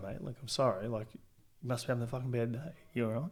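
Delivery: mock compassionate, understanding tone. Acting out how to answer an angry person: imitating a compassionate reply. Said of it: "come at 'em with, like, compassion and".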